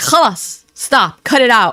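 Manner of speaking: mock irritated tone, very slow and drawn out. Retelling how Salah reacted in the car to a word: imitating Salah annoyed. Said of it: "He that that was very annoyed".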